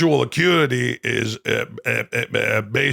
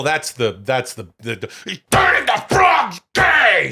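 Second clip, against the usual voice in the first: put-on enraged rant, pitched higher; 6 semitones higher, 3 dB louder than usual. Imitating Alex Jones's catchphrase in different tones, first: enraged Alex Jones impression.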